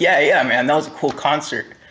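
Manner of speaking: ordinary delivery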